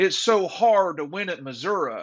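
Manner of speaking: very thick Southern drawl, laid on thick. Quoting a coach mocking Kirby Smart, the speaker does a thick Southern Kirby Smart impression. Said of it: "he goes into a very thick Southern accent here".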